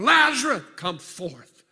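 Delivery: very loud, very high, tearful booming scream. Telling the lazarus story, retelling a booming, tearful scream. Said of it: "I can imagine his booming voice and tears running down his face. And he screamed".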